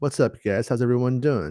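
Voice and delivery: ordinary talk, nothing marked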